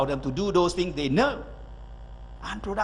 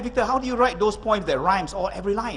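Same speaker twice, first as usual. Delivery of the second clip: usual speaking voice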